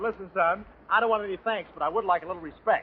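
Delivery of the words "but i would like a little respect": ordinary talk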